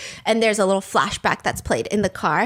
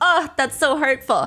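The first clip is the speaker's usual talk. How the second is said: plain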